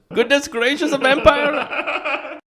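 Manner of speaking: over-the-top put-on Indian accent, slow and very high. Recounting how the Indian guy reacts to a vampire, in an Indian accent. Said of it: "he's doing an Indian accent".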